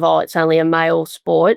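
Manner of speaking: ordinary talk, nothing marked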